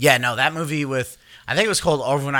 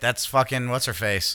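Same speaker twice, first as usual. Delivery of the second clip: normal talking voice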